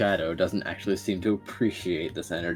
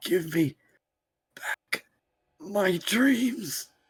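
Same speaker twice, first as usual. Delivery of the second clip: very high, halting, broken, wheezing croak; 12 semitones higher than usual. A broken man, freed from the chains, speaks one thing in a broken, wheezing croak. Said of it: "he is going to croak out one thing".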